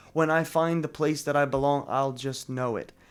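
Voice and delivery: ordinary talk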